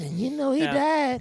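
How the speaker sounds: woman's voice, pitched very high. Retelling a woman's speech at a funeral: imitating a woman's voice. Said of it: "when you did that voice".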